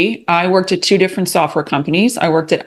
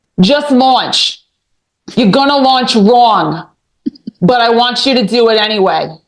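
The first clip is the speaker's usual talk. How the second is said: Long Island way of speaking; 5 semitones higher, 4 dB louder than usual. Retelling advice she gave on launching, very Long Island accent. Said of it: "in a very Long Island accent".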